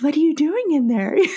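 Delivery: high, sweet little bird voice, pet-talk style. Imitating the speaker's dad talking sweetly to his birds, in his little bird voice. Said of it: "with his little bird voice".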